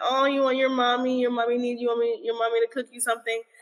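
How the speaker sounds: put-on cute, babyish baby talk voice. Showing how one talks to one's own kids for fun: cute baby talk. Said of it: "that's my cute way of talking to them".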